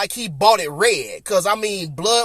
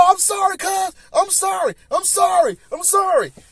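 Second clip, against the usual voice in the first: very high-pitched, repeated play-acted pleading; 11 semitones higher than usual. Retelling a fight where the beaten opponent kept apologizing: imitating someone apologizing. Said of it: "he just kept apologizing".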